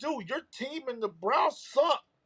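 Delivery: acted-out, high-pitched screaming. Retelling what they shouted at the team owners: imitating screaming.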